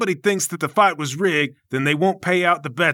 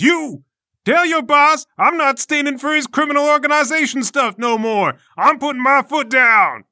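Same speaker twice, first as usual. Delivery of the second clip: loud, high-pitched, raised yell; 9 semitones higher, 4 dB louder than usual. Voicing the Obliterator pointing at a guy in the crowd: yelling as the Obliterator. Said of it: "he points at a guy in the crowd and he yells".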